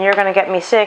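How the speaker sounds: usual speaking voice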